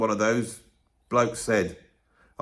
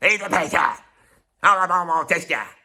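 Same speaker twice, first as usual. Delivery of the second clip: put-on, higher-pitched shouting Liverpool accent; 6 semitones higher than usual. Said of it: "a [name] and just shout".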